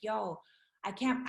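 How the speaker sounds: put-on sobbing, mock crying. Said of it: "I was crying, like, sobbing".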